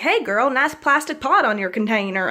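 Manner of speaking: fake, put-on American Southern accent. Joking about a plant in a plastic pot: put-on southern accent. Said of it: "I gave myself a southern accent".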